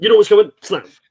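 rushed, very fast, shrill, very high and very loud. Retelling an in-game moment before the snap, imitate Jason Kelce saying it so quickly. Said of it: "the way he says it so quickly".

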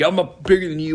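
acted aggressive, loud yelling. Speaker retelling how a man confronted her: retelling an aggressive yell. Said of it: "just went up and like yelled at her".

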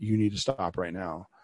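whispering. Retelling what was whispered to a son during a tantrum: retelling a whisper. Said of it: "I would whisper in his ear".

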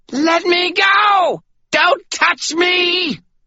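very high, shrill, terror-struck screaming. Reading a novel aloud, the Stygian suddenly raises her voice, terrified scream. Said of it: "She raised her voice into a terrified scream".

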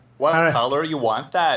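put-on Minnesota accent. Imitating powder coaters in a put-on Minnesotan accent. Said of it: "The Minnesotan powder coaters that come up and they go".

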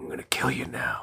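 hushed, mumbled whisper under the breath. Describing how to talk like Tobin Bell: whispered, mumbled Tobin Bell voice. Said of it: "You whisper and kind of mumble".

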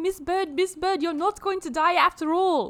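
put-on vampire accent. Retelling a movie scene as Gunther, the secondary antagonist: What We Do in the Shadows vampire accent. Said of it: "I'm just doing the accent of the fucking vampires".

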